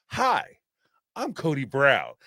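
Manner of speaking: slow, smooth drawl with swooping pitch. Reading a chat note that Cody sounded like American Psycho: Cody Brown like American Psycho.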